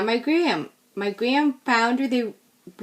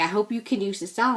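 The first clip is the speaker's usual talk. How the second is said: put-on Pennsylvania Dutch, Pennsylvania German accent. Retelling a grandmother handing over a present: imitating a Pennsylvania Dutch accent. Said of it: "cutest Pennsylvania Dutch or Pennsylvania German accent".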